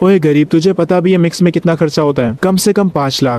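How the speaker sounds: usual speaking voice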